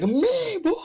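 put-on shrill, very high, shrieking scream. Retelling what the principal said at the conference: imitating someone screaming.

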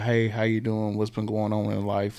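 ordinary delivery

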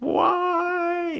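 acted, very high, long drawn-out shriek. Speaker recounts a scene where a woman starts screaming at a demon, retelling a scream. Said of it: "she starts screaming".

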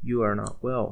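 ordinary delivery, nothing marked

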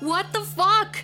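shrill, very high-pitched, loud shout. Narrator reads a woman finding a spatula stuck through her, shouted. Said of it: "she shouted".

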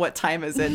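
normal talking voice

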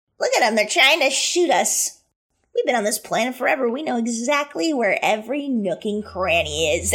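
mocking goblin voice laced with giggles. A game master voices a goblin that just sidestepped a shot, giggling goblin voice. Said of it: "the goblin just sidesteps and giggles and is like".

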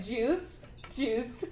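put-on high, childlike, toddler-like voice. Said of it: "She's like".

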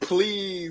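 high-pitched, desperate, pleading voice. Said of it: "He's begging for it".

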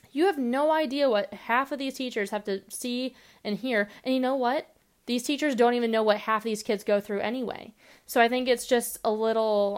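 ordinary talk

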